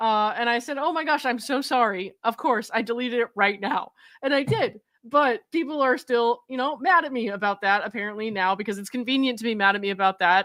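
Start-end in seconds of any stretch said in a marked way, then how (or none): 0.8-3.9 imitated anxious, apologetic pleading tone. Retelling a reply to the judge's chambers, imitating own anxious apology. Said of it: "deeply apologetic all the time".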